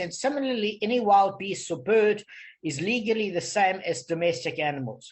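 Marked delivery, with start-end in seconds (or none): none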